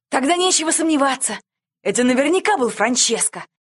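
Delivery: high-pitched, gleeful, cheerful exclaiming. Narrator reads a seated pilot's line, cheerful exclamation. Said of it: "весело воскликнул сидящий пилот".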